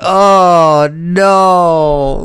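high, loud anguished groan of dismay.

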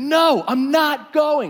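really upset, high, loud, slow wail. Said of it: "he's getting, like, really upset".

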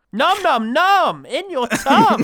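very loud, shrill, high, slow, drawn-out booming yell. Speaker blurts a line and is asked why they are shouting; shouting. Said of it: "Why are you shouting?".

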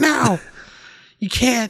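high-pitched, put-on, scolding voice. Acting out the hatchet woman refusing to pour a drink: put-on mom voice. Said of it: "your voice for her is also the same voice as when you're pretending to be your mom".

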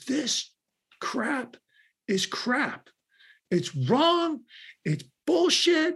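mock very high, very slow, drawn-out yelling. Retelling how the CEO yelled down the hall: imitating Bill yelling. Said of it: "he starts yelling at me".

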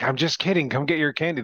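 put-on high, called-out yell. Retelling calling after little kids who dropped their candy, retelling a scream. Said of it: "I was screaming like".

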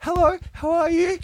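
very loud, very high, slow put-on phone voice. Showing how a phone voice goes up: put-on high phone voice. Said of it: "it just goes up a couple of octaves".

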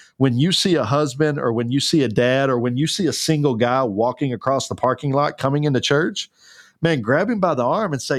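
ordinary talk

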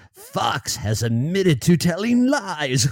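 put-on evil villain voice. Quoting a statement by Dominion's CEO, in a put-on evil voice. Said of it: "I should say it like in an evil voice".

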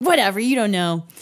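play-acted, very defensive, prickly, dismissive tone. Retelling the speaker's own past reply to a man's remark: retelling being super defensive. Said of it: "I got super defensive".

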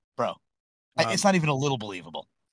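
plain

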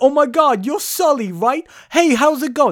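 terrible put-on New York accent, very high pitch. Retelling a film scene where a bartender greets a customer, terrible New York accent. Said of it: "This is a terrible New York accent".

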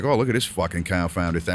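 ordinary delivery

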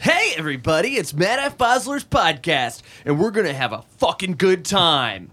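bright, cheerful podcast-host voice, put on. Restarting the podcast intro after a bad take: put-on fun upbeat delivery. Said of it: "like a fun person that you would wanna listen to".

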